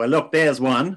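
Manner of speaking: put-on pleasant, easygoing, lovely Australian accent. Retelling what a man said to her, in a lovely Australian accent. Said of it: "in a lovely Australian accent".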